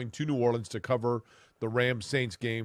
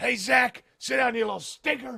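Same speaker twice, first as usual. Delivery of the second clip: play-acted very high, loud, scolding screech; 13 semitones higher, 5 dB louder than usual. Retelling a plane story, imitating Jack Snow screaming at a kid. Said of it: "and starts screaming at him".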